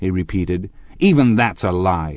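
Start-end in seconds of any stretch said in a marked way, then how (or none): 1.0-2.2 savage, fierce, vicious. Tom breaks in on Gatsby and the sobbing woman, savage. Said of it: "said Tom savagely".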